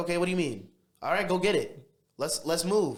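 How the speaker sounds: quick brash talking. Retelling own quick city way of talking: imitating own quick city talk. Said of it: "'cause we're quick".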